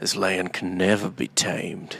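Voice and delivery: slow, soft, dramatic western-style delivery.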